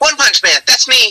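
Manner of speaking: very high-pitched teasing voice. Making fun of Max when asked to: Max Mittelman impression. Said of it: "if you had to make fun of Max".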